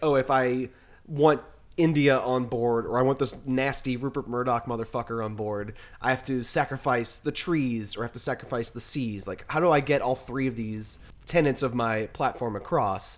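ordinary talk

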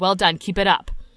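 mock condescending tone. Acting out praise to congressional representatives: mock condescending tone. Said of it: "probably in a condescending way".

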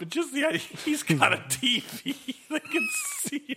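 words breaking up with laughter, very high. Discussing a movie wizard's TV with another speaker, laughing while talking. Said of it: "I'm sorry I'm laughing so much".

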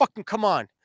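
acted stern telling-off. Retelling scolding a modem after kicking it: retelling a stern scolding. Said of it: "I gave it a stern talking to".

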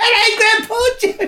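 very high yell at the top of her lungs. Retelling how a child called out when things went quiet: retelling a top-of-voice shout. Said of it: "Like the top of her voice".

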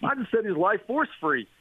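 mock smart-aleck comeback. Retelling his own reply to a woman's question: imitating a smart-aleck reply. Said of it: "smart ass reply number two".

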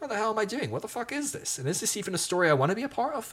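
high, exasperated inner outburst.

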